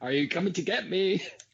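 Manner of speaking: play-acted, high-pitched street shouting. Retelling a movie scene to another speaker: imitating a character shouting. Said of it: "where he's just shouting".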